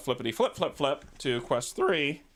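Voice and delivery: voice cracks while speaking. Speaker switches to quest three, voice cracking. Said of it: "And my voice just cracked".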